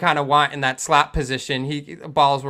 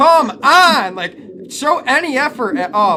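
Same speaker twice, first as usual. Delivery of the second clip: very high, drawn-out scream; 10 semitones higher, 5 dB louder than usual. Retelling watching a slow defender on screen: retelling screaming at the screen. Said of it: "screaming at the screen".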